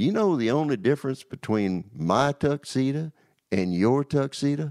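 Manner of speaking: put-on genuine Southern accent. On the way over, Butch speaks to the speaker; Butch's Southern accent. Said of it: "in his true Southern accent".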